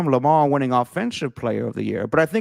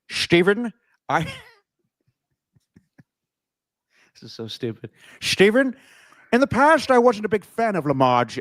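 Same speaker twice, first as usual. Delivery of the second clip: clumsy, grouchy cartoon creature voice; 3 semitones higher than usual. Giving an MVP opinion to a fellow sports talker, bad Grinch impression. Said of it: "I don't even know what voice I'm doing".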